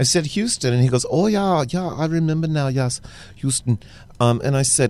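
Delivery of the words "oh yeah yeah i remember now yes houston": put-on German accent. Retelling a man's reply in a conversation, in a German accent. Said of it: "perfect German accent".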